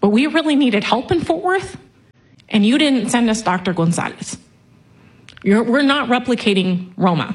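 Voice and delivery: pushing on while fighting off crying mid-sentence. Addressing Mister Buckley about the classroom, holding back tears. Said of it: "I'm gonna try and say this without crying".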